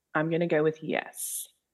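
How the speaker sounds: unsure, tentative. Asked if the season was a good follow-up, answering hesitantly. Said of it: "You don't sound sure".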